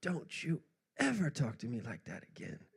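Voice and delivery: mock heated scolding outburst, yelling, pitch swinging. Retelling a father's outburst in a coffee shop: imitating a father yelling. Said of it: "yells at me in front of everybody".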